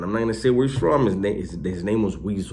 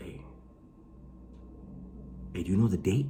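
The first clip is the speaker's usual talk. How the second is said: very hushed, soft, sneaky, furtive whisper; 12 dB quieter than usual. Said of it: "why did you whisper right now".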